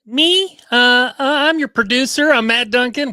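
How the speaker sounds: oddly shrill, high voice. The producer introducing himself on a podcast, in an unexpectedly high voice. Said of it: "I don't know why I went so high there".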